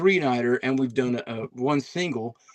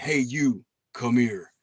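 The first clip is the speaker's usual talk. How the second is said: deep male cowboy-style voice, calling out. Retelling a voice heard on a recording played back: imitating a deep male cowboy voice. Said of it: "a deep male cowboy sounding type".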